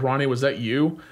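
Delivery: plain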